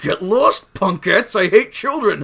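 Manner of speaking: loud, high, slow, drawn-out dismissive tone. Retelling a cartoon scene where children latch on: imitating Pizzazz. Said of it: "Pizzazz is just like".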